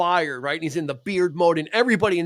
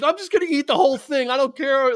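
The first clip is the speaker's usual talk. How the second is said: mock crying, tearful voice, higher; 9 semitones higher than usual. Retelling a movie scene where a character eats cat shit: imitating someone crying.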